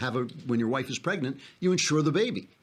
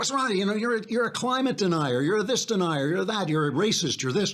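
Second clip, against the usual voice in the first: mock badgering, hectoring harangue, high-pitched; 7 semitones higher than usual. Retelling how critics hector people: imitating people hectoring. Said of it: "they start to hector you".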